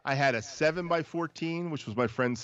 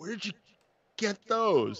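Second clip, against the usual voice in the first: high, freaked-out, panicky voice. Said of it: "He was, like, freaking out".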